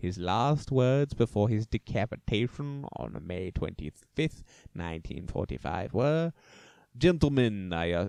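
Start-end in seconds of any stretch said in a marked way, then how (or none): 7.0-7.9 fake Russian accent, louder. Narrator quoting a condemned man's last words, in a put-on russian accent. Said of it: "that's a Russian accent".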